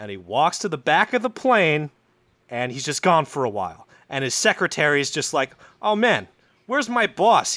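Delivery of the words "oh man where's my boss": put-on New York accent, spoken slower. Telling a story about a man on his private plane; his secretary speaks, New York accent. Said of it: "his secretary's got a fucking New York accent".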